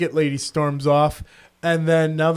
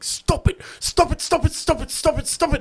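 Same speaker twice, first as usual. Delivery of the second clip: put-on very high, freaked-out, frantic repeated outburst; 12 semitones higher than usual. Retelling how a woman on a train lost her mind: imitating a woman freaking out. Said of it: "loses her mind and starts going".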